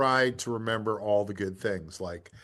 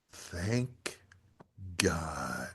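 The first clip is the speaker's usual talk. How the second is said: low, deep mutter, loud enough to carry; 5 semitones lower, 7 dB quieter than usual. Retelling a heckler's remark from the back of the room: imitating a low mutter. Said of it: "Just real low".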